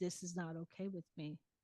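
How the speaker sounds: completely serious, no joking, dead-serious. Retelling what was said on walking into the kitchen: imitating own dead-serious tone. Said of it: "dead serious, straight face".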